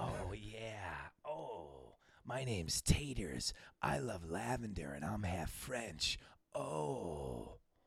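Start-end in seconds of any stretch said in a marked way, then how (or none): 0.0-6.2 creepy porn-star voice, lower, quieter. Redoing a bit after being told to do it sexy: sexy sleazy Taters voice. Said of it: "Do it sexy".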